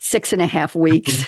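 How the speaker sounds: usual speaking voice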